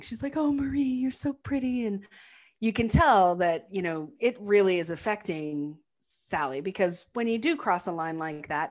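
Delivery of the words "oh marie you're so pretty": play-acted, high, bawling speech through tears. Retelling a film scene, imitating Sally bawling. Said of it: "she just starts bawling".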